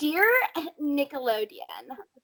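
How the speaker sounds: swooping, put-on entitled complaining voice. Pretend-typing a complaint letter to Nickelodeon: put-on Karen voice. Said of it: "I'm going to do it in a Karen voice".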